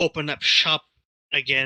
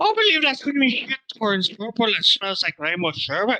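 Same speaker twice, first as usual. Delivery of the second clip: high, distant-sounding, mock Scottish-Irish movie accent. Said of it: "mine is heavily influenced by, uh, O'Hagan's variation".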